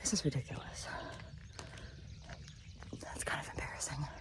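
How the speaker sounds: huffing and puffing. Walking laps while pregnant, the speaker is huffing and puffing. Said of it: "I am huffing and puffing".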